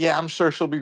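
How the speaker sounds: normal talking voice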